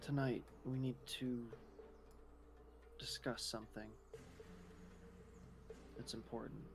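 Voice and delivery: low, soft whisper.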